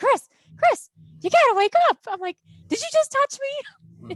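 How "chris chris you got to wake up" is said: very high, loud, frantic, panicked yell. Speaker recalling yelling to wake a cousin in a sleeping bag; retelling a yell. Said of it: "and I'm yelling".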